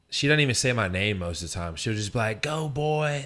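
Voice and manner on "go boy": put-on high, loud cheering scream. A player describing his mom in the stands, imitating her screaming. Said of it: "She's probably screaming like".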